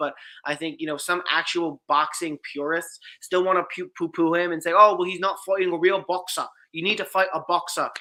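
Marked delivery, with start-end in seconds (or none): 4.7-7.9 put-on blended British-Irish accent. Mimicking boxing purists dismissing a fighter, in a mixed British-Irish accent. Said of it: "like a British or an Irish accent, whatever melding of the two I just did".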